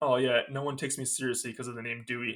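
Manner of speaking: ordinary delivery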